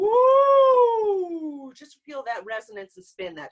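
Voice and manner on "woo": very high, drawn-out, owl-like ghostly hoot. Demonstrating head-voice resonance to learners, imitating an owl or a ghost. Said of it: "imitate an owl, or a ghost".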